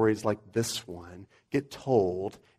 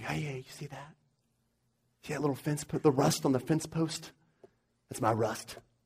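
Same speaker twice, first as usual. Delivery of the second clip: soft, hushed half-whisper; 4 semitones higher, 7 dB quieter than usual. Retelling what people at the concert say to each other: imitating people half-whispering. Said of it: "you can hear people whispering".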